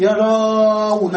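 yerawna said slowly, stretched and drawn out.

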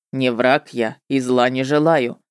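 commanding tone. The witcher, looking hard at the narrator, speaks to her, commanding. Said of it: "приказал ведьмак".

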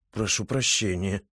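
embarrassed mutter. The writer apologizes to the Kikimora after her reassurance: embarrassed mutter. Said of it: "смущенно пробормотал писатель".

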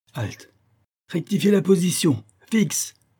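high, shouted, barking parade-ground drill voice. Toto calls for attention, shouting commands. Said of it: "cria Toto".

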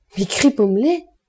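sudden surprised cry, exclaiming. Narrator reads a line by Madame d'Anglars, exclaiming. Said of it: "S'écria madame d'Anglars".

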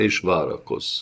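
plain reading voice

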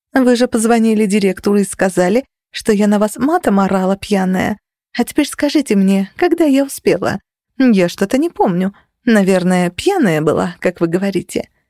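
ordinary delivery, nothing marked

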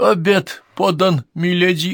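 quavering, unsteady, trembling voice. Narrator reads a woman announcing dinner to the gathered members, in a trembling voice. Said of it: "объявила она дрожащим голосом".

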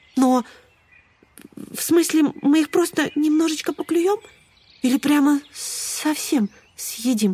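scared, worried, frightened, high-pitched. A sparrow reacts to his friends' plan to peck the chicks, frightened. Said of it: "испугался воробей".

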